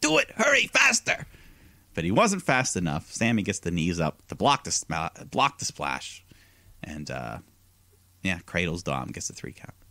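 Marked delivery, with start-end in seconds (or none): 0.0-1.3 put-on yell, pitched much higher. Recapping a match, quoting Ray yelling during a move, imitating Ray yelling. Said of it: "Ray is just yelling at him".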